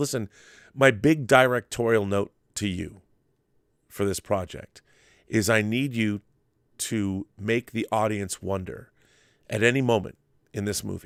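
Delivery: ordinary talk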